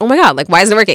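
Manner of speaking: put-on exasperated outburst. Telling a story, the speaker reenacts getting annoyed at a schedule: retelling an annoyed outburst. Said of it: "I raised my voice a little bit and".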